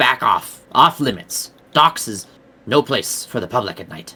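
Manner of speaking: spat out in a hiss. Game master voicing a character who confronts the player, hissing. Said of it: "He hisses at you".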